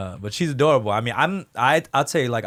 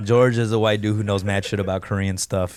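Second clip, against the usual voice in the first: plain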